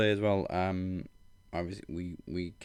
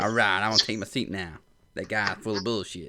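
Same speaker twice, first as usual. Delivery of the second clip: put-on laid-back drawl, louder; 5 dB louder than usual. Continuing the imagined Matthew McConaughey line: Matthew McConaughey voice. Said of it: "Matthew McConaughey would have nailed that line".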